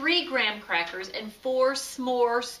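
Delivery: plain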